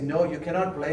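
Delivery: ordinary talk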